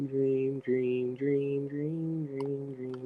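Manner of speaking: spooky fading echo.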